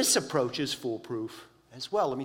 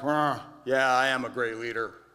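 put-on dim, grunting big-guy voice. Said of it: "Allen grunted something like".

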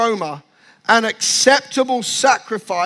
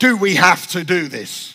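put-on reluctant voice, lower pitch; 4 semitones lower than usual. Speaker acts out kids asked to do the washing up, imitating reluctant kids. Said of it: "trying to get the kids to do the washing up".

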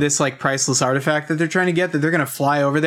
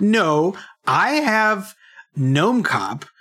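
mock very slow, affronted, indignant delivery; 4 semitones higher than usual. Retelling a scene where Jay insists he already owns Gnome Cop: imitating Jay being indignant. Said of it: "Jay being very indignant and being like".

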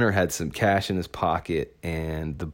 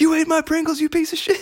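shrill, very high-pitched, loud yelling; 6 dB louder than usual. Quoting a guy who yells at another man over his backpack, retelling a yell. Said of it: "And he's yelling at this guy".

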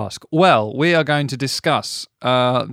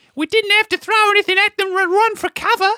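very high put-on Australian woman's accent. Trying out a voice at a co-speaker's suggestion, Australian woman's accent. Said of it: "Could be an Australian woman".

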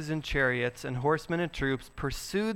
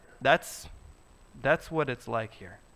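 ordinary talk

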